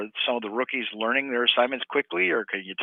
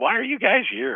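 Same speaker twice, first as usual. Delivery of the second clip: teasing tone, higher and louder; 11 semitones higher, 4 dB louder than usual. Retelling how Goody came over and teased reporters: imitating Goody teasing.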